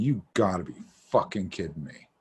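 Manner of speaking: stunned, disbelieving, disappointed outburst. Retelling walking out of a hyped movie: retelling own disappointed reaction. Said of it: "I was so disappointed".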